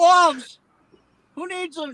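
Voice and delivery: very high, shrill, mocking, heckling jeer. Recounting two men heckling a safety meeting, imitating their heckling. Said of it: "They're just heckling".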